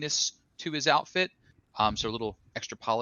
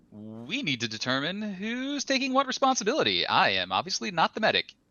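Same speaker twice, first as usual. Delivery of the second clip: robotic voice, pitched up; 7 semitones higher than usual. Speaking in character as Cabby during combat planning: robotic Cabby voice. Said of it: "Said in the robotic Cabby voice".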